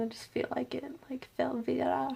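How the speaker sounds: quiet whispered aside.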